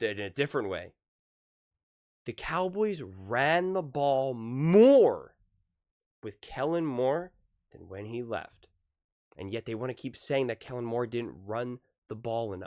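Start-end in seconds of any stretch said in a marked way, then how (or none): 2.3-8.7 very slow, deliberate, drawn-out delivery. Speaker repeats the point one more time for you guys, saying it really slow. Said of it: "I'm going to say it really slow".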